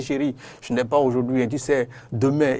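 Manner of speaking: normal talking voice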